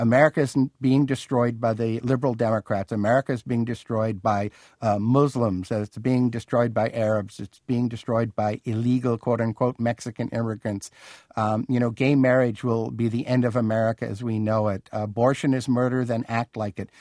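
ordinary talk

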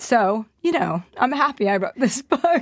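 crying voice, wet with tears, words breaking. An author being interviewed about her book speaks while crying. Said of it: "even though I'm crying".

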